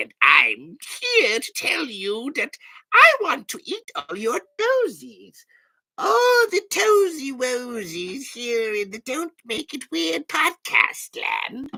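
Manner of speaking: squeaky, very high, swooping little goblin voice. A podcast host doing their usual bit in a little goblin voice. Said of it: "this is my little goblin voice".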